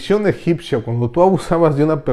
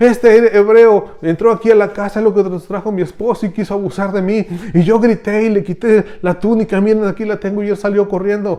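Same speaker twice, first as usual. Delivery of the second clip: put-on female shouting, higher; 7 semitones higher, 4 dB louder than usual. Retelling how a woman accused a Hebrew man, imitating a woman shouting. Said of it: "empieza a gritar y la gente se mete".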